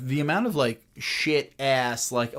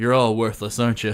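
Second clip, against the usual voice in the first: put-on muttered aside, lower and louder; 3 semitones lower, 5 dB louder than usual. Retelling a film scene, quoting the line like James Spader under his breath. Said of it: "Just under his breath".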